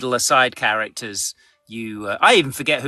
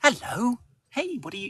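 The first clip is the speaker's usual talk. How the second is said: very high, soft, calm, gentle voice; 10 semitones higher, 6 dB quieter than usual. Showing the voice used to engage young kids: calm, gentle voice. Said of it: "more calm, gentle, uh, gentle voice".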